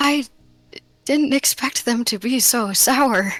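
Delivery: speaking in a whisper. Voicing a character answering a whispered tip about sour grapes: whispering back. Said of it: "whispering back".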